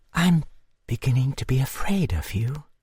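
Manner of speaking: slow, measured, unhurried, drawn-out delivery. Reading a novel aloud, voice the woman speaking to Duns, slow, almost whispering. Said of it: "she said in a slow voice, and almost in a whisper".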